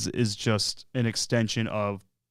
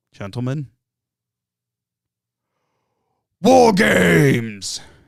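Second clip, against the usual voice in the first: intense, very loud swooping shout, "games" stretched; 6 semitones higher, 9 dB louder than usual. Imitating a wrestling figure's segment call: intense Regal impression. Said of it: "He gets so intense".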